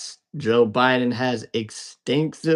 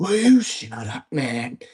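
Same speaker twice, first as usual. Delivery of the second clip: tossed out like a debate jab; 3 semitones higher than usual. Recalling him running against Trump, the speaker does a Joe Biden impression. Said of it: "That's my Biden impersonation".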